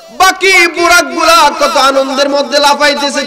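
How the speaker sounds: calling out, high and loud.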